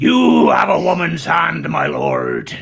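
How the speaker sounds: put-on theatrical, swooping, sing-song West Country accent. Asked for a West Country accent, speaker quotes Blackadder, Tom Baker's West Country accent. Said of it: "can you do a West Country accent?".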